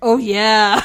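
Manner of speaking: loud booming mascot voice. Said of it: "he's a Kool-Aid man".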